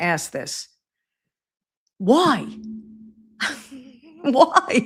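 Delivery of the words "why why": talking through laughter. Asking why the alternate broadcast is needed, laughing while talking. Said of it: "I have to laugh".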